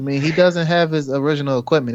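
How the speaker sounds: usual speaking voice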